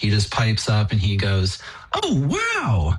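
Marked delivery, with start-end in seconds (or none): 1.9-3.0 put-on very high, piping small-child voice, exclaiming. Retelling a toddler piping up during his sermon, imitating a toddler's exclamation. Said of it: "just that tone and that inflection".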